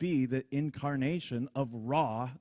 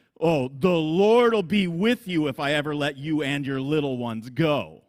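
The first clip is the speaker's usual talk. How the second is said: loud, slow, drawn-out mocking sarcasm; 8 dB louder than usual. Explaining scripture, acting out Pharaoh's reply to Moses: acting out Pharaoh's sarcasm. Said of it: "one of the most sarcastic sentences".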